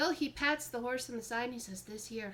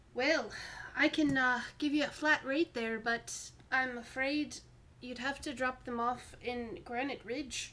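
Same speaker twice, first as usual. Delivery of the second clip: put-on mixed Irish and Scottish accent; 3 dB louder than usual. Answering travelers who ask for horses and a cart, Irish-Scottish mixed accent. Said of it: "Like an Irish Scottish mix".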